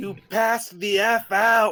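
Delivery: shouting. A player reacts to the story being told, yelling. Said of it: "Don't yell".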